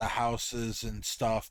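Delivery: ordinary delivery, nothing marked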